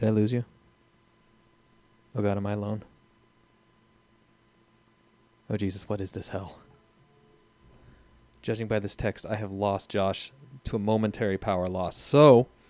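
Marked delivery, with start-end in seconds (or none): 0.0-6.6 panic rising in the voice. Talking to listeners after the other speaker drops out, panicked voice. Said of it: "it's panic in my voice".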